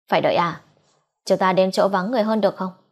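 ordinary delivery

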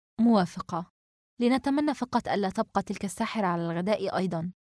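plain reading voice

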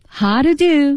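pitch climbs then drops on how to do. Practicing the English line 'how to do': rise-fall pitch on 'how to do'. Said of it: "先声后降".

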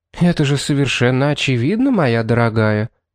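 plain

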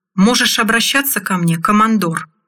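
ordinary delivery, nothing marked

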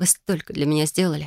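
plain reading voice

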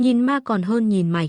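ordinary delivery

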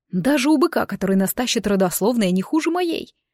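ordinary delivery

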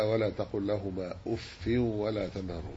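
ordinary talk, nothing marked

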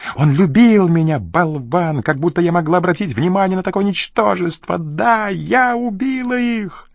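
high, screamed, yelled out. A woman backing away with a pistol screams as a man stands up, screaming. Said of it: "завопила она".

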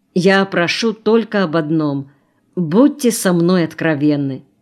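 plain reading voice

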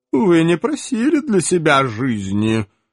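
icy, cold tone with an audible smirk. An elf answers a Cossack's question, with a cold smirk. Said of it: "холодно усмехнулся эльф".

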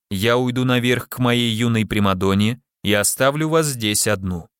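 ordinary delivery

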